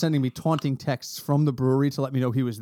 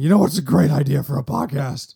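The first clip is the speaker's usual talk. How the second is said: put-on gruff drunk voice, louder; 5 dB louder than usual. Retelling what was said over beers at the brewery: put-on drunken voice like Nick Nolte. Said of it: "every time I go into my drunken voice".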